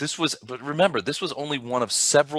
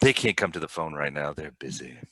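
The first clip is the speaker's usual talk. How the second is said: put-on super creepy voice, very low; 8 semitones lower, 4 dB quieter than usual. Answering a caller who asks for family members, in a super creepy voice. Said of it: "That voice, ... it's super creepy".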